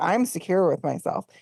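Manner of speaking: put-on smug, superior tone. Retelling how a cast member spoke on the patio: imitating Jasmine's holier-than-thou tone. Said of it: "holier than thou tone".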